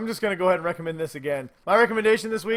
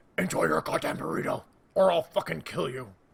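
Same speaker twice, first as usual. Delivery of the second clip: gravelly whispered superhero voice; 3 semitones lower, 4 dB quieter than usual. Riffing on a catchphrase about enjoying a burrito, in a Batman voice. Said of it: "You gotta do it in a Batman voice".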